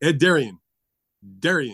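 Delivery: drawn-out ring announcer calling voice. Imitating a ring announcer saying the name twice: Ed Darian impression. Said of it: "Let me do my Ed Darian imitation".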